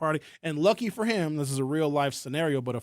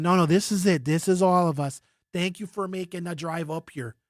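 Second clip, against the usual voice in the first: thick, put-on northwoods Wisconsin accent; 3 semitones higher, 4 dB louder than usual. Speaker imitates the hosts of a county party meeting greeting visitors, Wisconsin accent. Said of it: "they got that Wisconsin accent".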